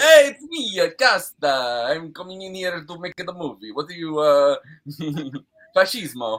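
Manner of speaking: put-on Italian accent, drawn out. Joking after being teased about accents on greek names: put-on italian accent. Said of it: "the Italian accent that you put on all the Greek names".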